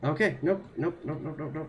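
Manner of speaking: rattled-off, fast, panicked repeated "nope". Getting lost in the tunnels while playing, trying to get out: panicking. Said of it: "oh god, I'm panicking".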